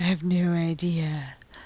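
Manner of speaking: eerie, slow, drawn-out creepy voice. Quoting the speaker's husband answering from over there, in a creepy voice. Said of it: "kind of creepy voice".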